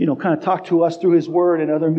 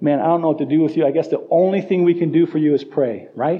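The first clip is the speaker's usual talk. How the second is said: usual speaking voice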